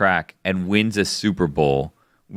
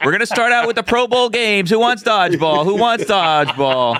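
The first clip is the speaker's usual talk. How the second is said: auctioneer voice, higher and louder; 13 semitones higher, 4 dB louder than usual. Opening a joke Super Bowl auction, calling out the first lots: auctioneer voice. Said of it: "why are you doing it as an auctioneer?".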